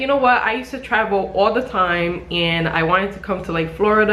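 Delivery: ordinary delivery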